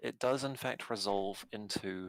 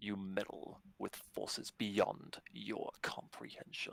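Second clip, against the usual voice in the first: far deeper, inhuman, hushed voice; 2 semitones lower, 5 dB quieter than usual. Narrating the blue-cloaked rider circling above you as his voice changes: far deeper inhuman voice. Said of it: "his voice abruptly changes to something far deeper and inhuman".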